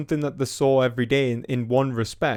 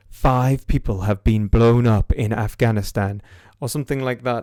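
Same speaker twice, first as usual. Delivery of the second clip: mock-serious newsreader delivery, lower pitch; 3 semitones lower, 4 dB louder than usual. Criticizing how the news reports violence, mimicking a serious newsreader tone. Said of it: "They say it in a serious tone".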